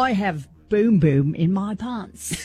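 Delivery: seductive Aussie accent. Asked on the show to repeat the phrase in your best sexy Australian accent. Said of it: "In your best sexy Australian accent".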